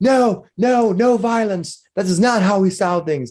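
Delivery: very high-pitched, shrill shouting. Voicing Lenine as the crowd tugs on a man: shouting as Lenine. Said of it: "Lenine starts shouting".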